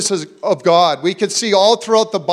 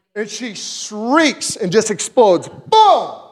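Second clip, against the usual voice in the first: ordinary talk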